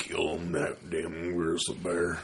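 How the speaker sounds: soft, slow, rugged rancher voice. Joining the other speaker's impression of a rancher: rugged rancher voice. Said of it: "he talked kind of like that, like, real rugged".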